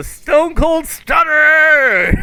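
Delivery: high, slow, booming wrestling-announcer shout.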